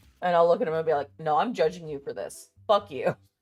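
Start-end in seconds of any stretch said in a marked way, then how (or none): 1.2-3.1 imitated sassy delivery. Retelling what was said to a partner, imitating own sassy reply. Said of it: "being all sassy and shit".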